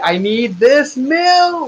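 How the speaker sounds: mock very slow, high, drawn-out, upset frantic frog scream. Voicing a character who demands the milk: screaming like an upset frog. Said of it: "he starts screaming like an upset frog".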